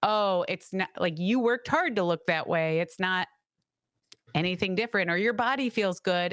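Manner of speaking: usual speaking voice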